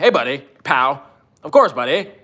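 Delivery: put-on, cartoonish Canadian accent. Joking with someone, the speaker puts on a South Park Canadian voice. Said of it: "I'm getting my Canadian voice on".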